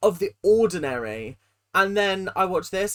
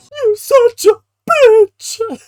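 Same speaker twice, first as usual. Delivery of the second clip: very high, very loud, shrill, drawn-out cartoon voice; 12 dB louder than usual. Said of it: "You sound like a cartoon character".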